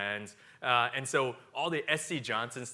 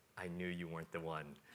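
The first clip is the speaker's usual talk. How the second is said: very quiet, hushed half-whisper; 6 semitones lower, 13 dB quieter than usual. Retelling what a woman half-whispered in the speaker's ear, retelling a half-whisper. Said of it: "she whispers in my ear".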